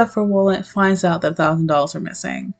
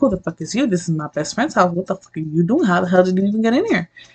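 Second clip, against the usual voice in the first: put-on panicked, freaking-out outburst. Retelling her reaction to a suited man barging into the bathroom: imitating someone freaking out. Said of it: "And she's freaking out".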